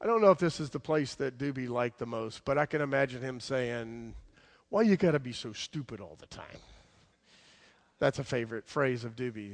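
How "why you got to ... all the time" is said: put-on Jersey accent voice. Imagining what he would say, in Doobie's Jersey voice. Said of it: "It says in his Jersey voice".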